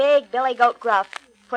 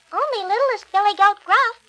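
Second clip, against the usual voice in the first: small, higher-pitched voice; 8 semitones higher than usual. Narrator voicing the littlest goat answering the troll, littlest Billy Goat Gruff's small voice. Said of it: "said the little goat in his small voice".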